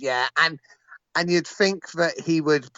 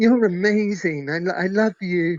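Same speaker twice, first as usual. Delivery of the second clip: ridiculous put-on starstruck gushing voice, higher; 4 semitones higher than usual. Retelling meeting a rugby legend in a plane queue, ridiculous put-on starstruck voice. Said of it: "Why did you put on such a ridiculous voice?".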